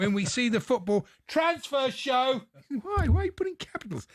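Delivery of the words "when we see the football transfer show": mock loud shouting, pitch rising. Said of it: "So I have to shout it".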